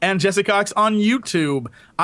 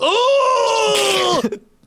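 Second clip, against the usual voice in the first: put-on anime kid voice, higher; 3 dB louder than usual. Describing a stock anime game kid, imitating an anime game sidekick kid. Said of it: "the kid who's in every anime game who's like".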